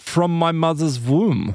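put-on slight German accent. Retelling an entity answering where it was born, in a slight German accent as Carl Jung. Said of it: "speaking in this slight German accent".

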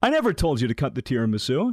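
ordinary talk

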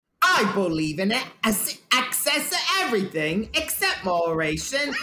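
put-on London Cockney accent. Called on next, he delivers a quote in a Cockney accent. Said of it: "I wanted to do a Cockney accent".

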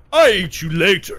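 loud, high-pitched, slow, drawn-out shout. Voicing the Great Orp silencing a captive: Orp voice. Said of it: "And then he snaps his neck".

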